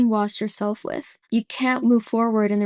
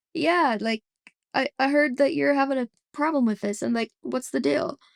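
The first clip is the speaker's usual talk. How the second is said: acted, casual, speaking through a chuckle; 4 semitones higher than usual. Retelling what a caller asked on the phone, imitating someone laughing. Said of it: "he was kind of laughing".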